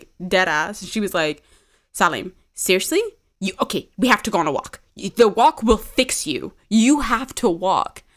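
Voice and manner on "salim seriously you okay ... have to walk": mock stern, firm, commanding no-nonsense tone. Retelling a friend's order to go on a walk: imitating a stern friend. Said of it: "she looked at me so stern".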